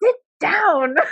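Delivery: put-on German accent, very high pitch. Recalling what Gunter always says while helping polish it, Gunter's German accent. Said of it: "in his German accent".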